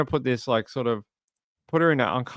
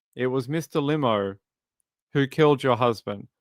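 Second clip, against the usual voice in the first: ordinary talk, nothing marked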